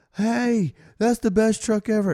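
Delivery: put-on high, tipsy, drunken yell. Retelling drunk girls in the mezzanine yelling down: imitating drunk girls yelling. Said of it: "drunk girls that kept, like, yelling to us".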